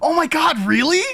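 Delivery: very high, loud, stunned amazed disbelief. Retelling a girl's reaction to a joke: imitating amazed disbelief. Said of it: "the absolute fucking look of".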